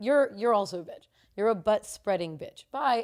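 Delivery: ordinary talk, nothing marked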